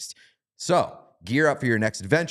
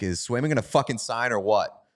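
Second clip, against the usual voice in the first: mock half-shouted, mild yelling voice; 2 semitones higher than usual. Retelling what a stranger yelled at them: imitating someone yelling. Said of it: "just yelled at me".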